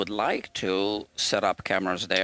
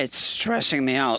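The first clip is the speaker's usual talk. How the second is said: voice cracking and breaking up; 4 semitones higher, 3 dB louder than usual. Saying something is stressing them out, voice breaking up. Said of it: "my voice is breaking up".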